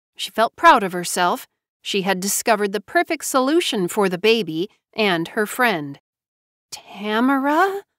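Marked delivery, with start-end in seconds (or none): 6.7-7.8 whisper, higher. Narrator reads a woman at the table, whispered. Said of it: "Jobeth whispered".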